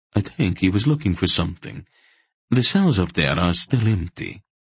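ordinary delivery

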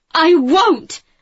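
high, loud, outright shout. First-person narrator answers a sparring opponent on the training ground: shouted. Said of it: "I shouted".

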